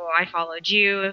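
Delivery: mock-sarcastic, put-on sarcastic tone. Describing a scene where a woman points a gun at him, imitating a sarcastic reply. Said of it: "he's so sarcastic".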